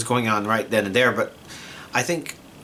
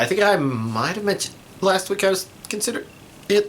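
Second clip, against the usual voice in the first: words broken by hiccups, a little pitched up; 8 semitones higher than usual. Giving this week's anime collection update, with hiccups. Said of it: "Sorry, hiccups".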